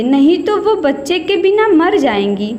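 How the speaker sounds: plain reading voice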